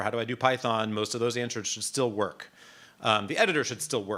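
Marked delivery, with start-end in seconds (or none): none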